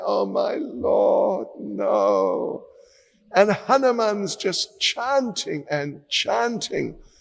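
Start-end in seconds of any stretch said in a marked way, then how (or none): 0.0-2.7 very slow, tearful, sobbing crying, acted out. Telling a story, voicing a character crying as an arrow flies. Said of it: "Guhaka is just crying and crying".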